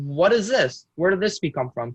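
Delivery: ordinary talk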